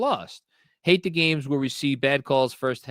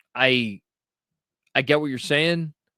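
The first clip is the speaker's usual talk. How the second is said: plain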